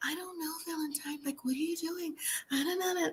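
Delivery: dainty little princess voice, high, soft and very quiet. Imitating how April usually talks, imitating April's soft princessy voice. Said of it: "Like that little soft princessy kind of thing".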